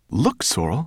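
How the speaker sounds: sudden, startled, surprised tone. Ben calls to Sorrel as a raven circles lower, in surprise. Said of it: "he said in surprise".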